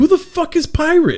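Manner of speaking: very high-pitched, angry, incredulous voice.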